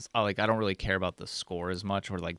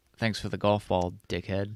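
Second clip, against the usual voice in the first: ordinary delivery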